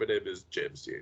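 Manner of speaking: breathy, nearly whispered, glamorous movie-star voice. Joking about faking a James Dean clip: Johnny Depp voice. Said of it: "do it like Johnny Depp or whatever".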